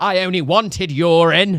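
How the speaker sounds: full-lunged, very loud, drawn-out bellow. Retelling how a woman reacted to a stool sample: retelling a shout. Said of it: "Literally at the top of her lungs".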